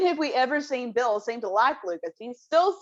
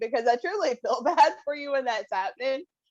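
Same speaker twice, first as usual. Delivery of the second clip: giggling and laughing through the words; 2 semitones higher than usual. Apologizing to another speaker whose audio keeps cutting out, laughing while talking. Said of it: "I don't know why I'm laughing".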